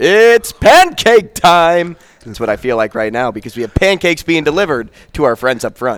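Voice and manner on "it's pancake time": big, booming, high-pitched scream. Retelling how Tremblay screamed out at a cousin's high school games: big booming scream. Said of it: "this big, booming voice. And he would just scream out".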